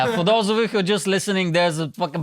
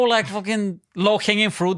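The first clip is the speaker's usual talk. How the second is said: ordinary delivery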